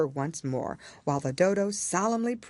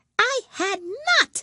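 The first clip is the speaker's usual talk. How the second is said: furious, sharp, very high, loud angry cry; 6 dB louder than usual. The Mouse answers Alice, sharp, very angry cry. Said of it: "cried the Mouse sharply and very angrily".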